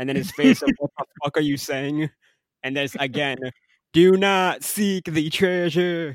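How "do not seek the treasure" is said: very slow, drawled, put-on Southern accent. Recounting a repeated warning from a scene: Southern accent. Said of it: "Tyler doing his best Southern accent here".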